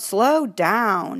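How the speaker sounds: forceful, emphatic calling out. Retelling calling out to a fast driver on the street, retelling an emphatic call. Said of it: "in an emphatic voice".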